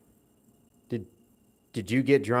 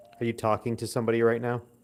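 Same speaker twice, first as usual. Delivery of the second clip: plain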